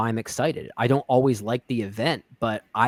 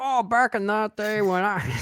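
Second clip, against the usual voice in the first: put-on bad, very high-pitched old man voice; 10 semitones higher than usual. Imagining telling the pandemic story years from now like old people: terrible old man voice. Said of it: "that is my version of an old man voice".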